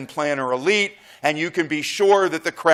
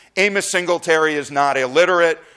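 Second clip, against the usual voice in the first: ordinary talk, nothing marked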